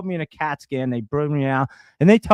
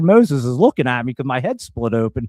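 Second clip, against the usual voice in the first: plain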